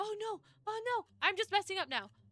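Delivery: panicking, flustered. Messing up while playing a game: panicking. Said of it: "I'm panicking! I am panicking!".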